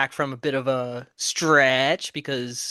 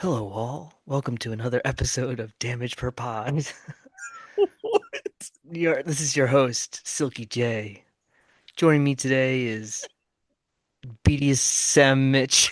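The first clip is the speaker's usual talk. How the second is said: put-on, fake sexy, sultry voice. Opening a podcast episode, the host introduces the show: fake sexy nighttime voice. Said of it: "I was trying to do like uh sexy nighttime voice".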